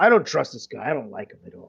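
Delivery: overly loud voice. Voicing a character glaring with hand on sword: saying it too loudly. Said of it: "not understanding how loud he really probably is saying it".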